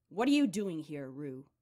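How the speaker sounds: loud rasping voice. Reading a novel, Domenico Corvo startles his daughter Rue in a rasping voice. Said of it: "The rasping voice of Domenico Corvo".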